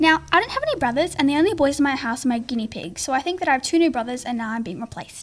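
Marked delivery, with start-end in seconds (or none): none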